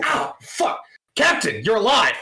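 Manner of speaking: startled yelp. Voicing a comms officer who jumps in his seat: startled comms officer. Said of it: "he jumps in his seat".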